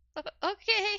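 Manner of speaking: very high, stammered, cringing voice. Voicing a wounded captive who cringes at a pat on the head: cringing reply. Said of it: "he cringes".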